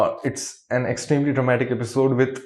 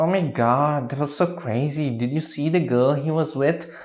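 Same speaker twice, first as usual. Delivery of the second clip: put-on nasal voice, talking through the nose; 3 dB quieter than usual. Complaining about an actress's annoying voice, imitating a nasal voice. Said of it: "Stop speaking like that".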